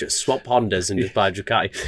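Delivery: normal talking voice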